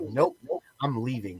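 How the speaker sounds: icy, level, stone-cold, flat delivery. Retelling his wife's answer when he called back yelling: imitating a stone-cold reply. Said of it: "stone cold in me was just like".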